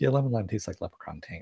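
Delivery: muttering under the breath. Imitating Scully's remark about lemon lime Jell-O, Scully muttering under her breath. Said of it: "under her breath a little bit".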